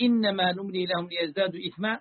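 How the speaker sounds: plain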